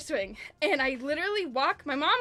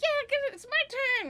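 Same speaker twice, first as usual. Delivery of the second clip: mock very high, all worked-up, excited eagerness; 11 semitones higher than usual. Retelling a turn on the tire swing as a kid: imitating own excited younger self. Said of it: "all excited".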